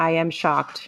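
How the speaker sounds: ordinary talk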